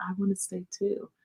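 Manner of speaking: tiny, painfully shy, very quiet voice. Retelling what a painfully shy kid said in answer: imitating a very quiet voice. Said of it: "In the most quietest voice".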